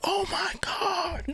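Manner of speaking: very high-pitched, hushed half-whisper. Retelling how they used to half-whisper while playing: half-whispering. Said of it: "we used to, like, whisper".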